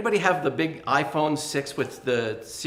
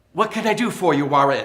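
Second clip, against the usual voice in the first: put-on British-accented voice assistant style voice; 6 dB louder than usual. Retelling a phone assistant speaking during a play: British accent. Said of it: "In a British accent".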